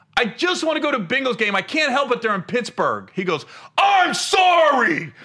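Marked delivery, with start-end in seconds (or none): 3.8-5.1 furious, full-intensity, raised angry voice. A comedian retells the reply of a man who confronted him, mock-angry apology. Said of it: "with the same anger".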